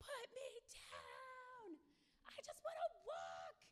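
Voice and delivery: very high, drawn-out, top-of-the-lungs tantrum scream. Retelling how she screamed when picked up in a store, retelling a top-of-lungs scream. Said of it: "she screamed at the top of her lungs".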